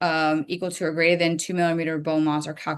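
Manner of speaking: rushed, too-fast speech. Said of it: "Sorry, I'm talking too fast".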